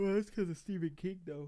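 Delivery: speaking through a yawn. Discussing movies set in Maine with another speaker, yawning while talking. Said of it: "I'm yawning again".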